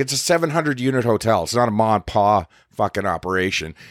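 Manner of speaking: plain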